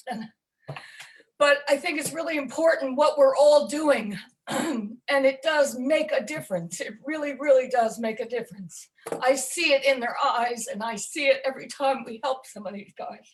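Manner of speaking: choked up, emotional, voice cracking and breaking. Talking about helping veterans after apologizing: choked up with emotion. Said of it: "I'm sorry, I get really choked up".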